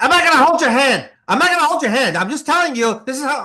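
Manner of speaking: loud, very high-pitched needling rant. Imitating a friend who read the script: Ray Liotta voice. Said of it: "I'm gonna do a little Ray Liotta voice".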